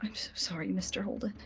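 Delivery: soft, trembling, unsteady voice. Describing a character's first spoken words, imitating a shaky voice. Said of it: "You hear a shaky voice go".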